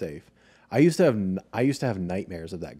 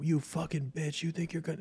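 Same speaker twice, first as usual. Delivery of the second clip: mock man screaming, higher pitched; 9 semitones higher, 7 dB quieter than usual. Retelling how a man at a red light screamed at mom: imitating a man screaming. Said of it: "screaming, like".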